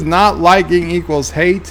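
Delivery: ordinary talk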